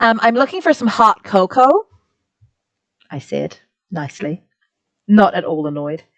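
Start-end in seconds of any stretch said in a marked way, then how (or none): 0.2-1.9 put-on American accent, a best attempt. Retelling a trip, speaking so people would understand, in an american accent. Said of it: "putting on my best American accent".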